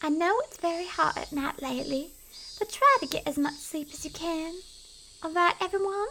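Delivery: put-on, high-pitched Southern belle accent. Reader voices a female character addressing everyone, in a Southern Belle accent. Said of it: "let's give her a Southern Belle accent".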